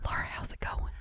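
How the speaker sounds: hushed whispered voice. Greeting a co-host at the start of a show: whispering. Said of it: "Why are we whispering?".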